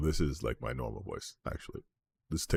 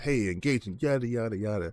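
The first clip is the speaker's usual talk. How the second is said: put-on, extra-engaging high-affect voice, pitched up; 8 semitones higher than usual. Showing viewers the different voices used on stream: high affect voice. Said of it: "So this is my high affect, higher affect".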